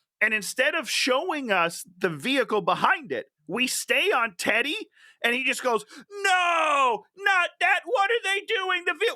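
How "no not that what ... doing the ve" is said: put-on shrill, very high yelling, stretched no. Retelling a movie scene where the character stares at a vehicle: imitating Teddy yelling. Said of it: "He's just yelling at nothing".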